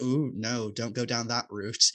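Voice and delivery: ordinary talk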